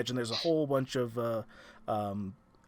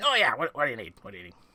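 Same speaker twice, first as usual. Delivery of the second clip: brusque character voice; 4 dB louder than usual. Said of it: "We need to work on your manners".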